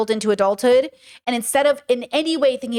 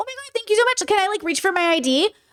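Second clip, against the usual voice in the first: polite, pitched-up customer-service voice; 9 semitones higher than usual. Describing what they call their people voice, then using that people voice. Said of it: "what I call my people voice".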